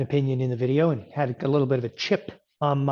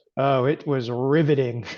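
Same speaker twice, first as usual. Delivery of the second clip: normal talking voice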